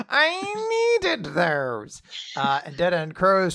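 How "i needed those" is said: very high, swooping put-on voice, I stretched long. Retelling a manga scene, voicing Ziggy complaining: Ziggy voice. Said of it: "I don't know why that's Ziggy's voice".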